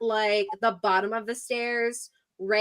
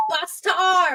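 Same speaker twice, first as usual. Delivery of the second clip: loud, high-pitched yell, calling out; 7 semitones higher, 5 dB louder than usual. The speaker voices a character calling to her sister down the hall: yelling. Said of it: "she is basically yelling down the hall".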